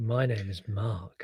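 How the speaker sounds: low, slow, drawn-out sultry delivery. Repeating a co-host's podcast introduction, imitating Mark's sultry voice. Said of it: "that was very sultry".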